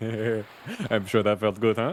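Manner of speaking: slow speech through a chuckle. Voicing Lorenzo after a friend's joke, chuckling while speaking. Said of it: "Lorenzo just starts kinda chuckling to himself".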